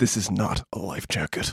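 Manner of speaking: very quiet, dead-serious whispered superhero voice. Recapping a story, doing a character's lines in a Batman voice. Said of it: "trying to do like the Batman voice".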